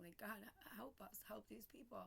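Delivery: very hushed, soft, tearful, crying voice. Recalling talking to God during a hard time: retelling a tearful prayer. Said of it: "so I'm just crying".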